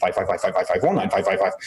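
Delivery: rapid, rattled-off, auctioneer-style calling. Retelling the navigator's calls at top speed: imitating a fast auctioneer. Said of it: "this guy sounds like an auctioneer".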